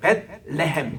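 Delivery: 레헴 in 벳레헴 stressed, said with a laugh.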